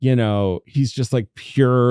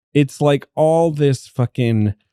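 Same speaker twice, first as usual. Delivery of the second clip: usual speaking voice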